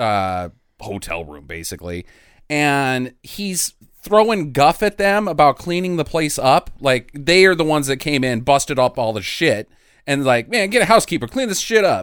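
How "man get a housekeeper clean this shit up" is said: high, quick, rattled-off, fast-talking patter. Retelling a scene where a character throws guff at mobsters: Axel Foley fast talking. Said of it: "It is so Axel Foley".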